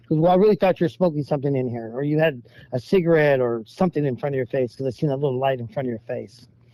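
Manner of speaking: usual speaking voice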